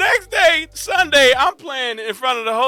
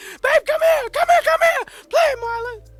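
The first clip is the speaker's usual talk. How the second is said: imitated excited voice. Retelling a mother calling the father over to listen: imitating his mom calling his dad. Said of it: "good impression of her".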